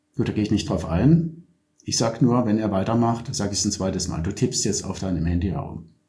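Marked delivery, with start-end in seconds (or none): 4.2-5.8 calm, level, matter-of-fact newsreader tone. Pointing out phone use without an annoyed tone, neutral newsreader tone. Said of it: "Ich sag's auch nicht mit einem angepissten Tonfall. Einfach so ganz neutral. Ja, so Nachrichtensprecher".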